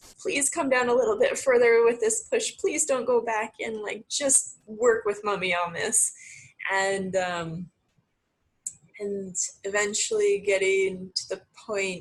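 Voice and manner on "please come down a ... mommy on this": put-on coaxing, begging, earnest pleading. Retelling pushing during the birth, pleading with the baby: retelling a plea. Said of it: "sort of that pleading".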